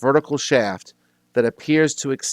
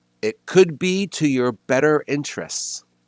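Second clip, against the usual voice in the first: grand, mysterious, unseen disembodied voice; 3 semitones higher than usual. Game master voicing a voice that fills the room: booming voice. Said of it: "a voice booms out in the room that says".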